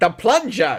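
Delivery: put-on loud, thick, laid-on New York accent. Explaining what a man yelled, quoting him in his thick New York accent. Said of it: "he said it in his thick New York accent".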